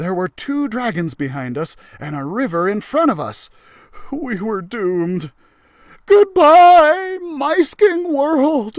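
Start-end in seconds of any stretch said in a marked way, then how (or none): 6.1-8.8 theatrical, grand and overly dramatic, very high pitch. Narrator, trapped between two dragons and a river, says goodbye in an overly dramatic farewell. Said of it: "I said dramatically".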